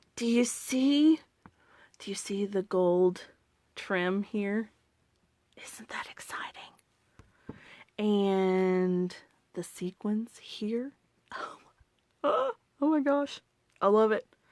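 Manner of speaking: quiet whispering. Pointing out the catalog while others keep stamping, whispering. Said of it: "I'm going to whisper".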